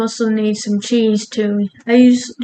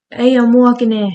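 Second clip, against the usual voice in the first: New York accent; 4 dB louder than usual. Doing the accent they forgot in an earlier video, a New York accent. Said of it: "I forgot to do the New York accent".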